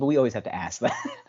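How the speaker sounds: usual speaking voice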